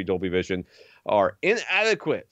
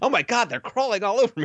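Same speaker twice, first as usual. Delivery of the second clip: mock shrieking, very high-pitched and shrill; 13 semitones higher than usual. Retelling what she screamed from back behind the kitchen, imitating her screaming. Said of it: "I heard her back there start screaming".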